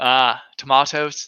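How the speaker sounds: posh British pronunciation. Showing how to say tomatoes: high British accent. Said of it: "It's like high British".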